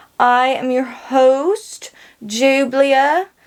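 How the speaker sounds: slow, drawn-out, bad fake Southern accent. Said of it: "this is not a good Southern accent".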